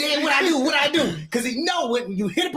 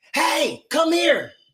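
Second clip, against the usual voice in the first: mild, pitched-up voice calling out; 5 semitones higher than usual. Describing calling his son down from upstairs, retelling a yell upstairs. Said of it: "if I'm yelling upstairs to my son".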